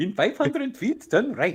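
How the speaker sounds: put-on Indian accent. Acting out a navigation device's directions: put-on Indian accent. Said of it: "the Indian cab driver".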